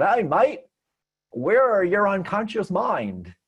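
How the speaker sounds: high-pitched fake Aussie accent. Retelling a dream where a gruff man speaks, in an Australian accent. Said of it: "in this totally kind of Australian accent".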